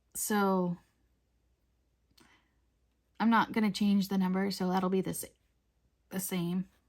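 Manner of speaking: hiccuping while speaking. Talking to viewers while painting after a big dinner, hiccuping. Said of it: "I keep like hiccuping".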